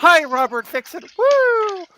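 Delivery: extra enthusiastic, very high, very slow, drawn out. Redoing an on-camera greeting after a flat first try: more excited. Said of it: "I should say that a little more excited".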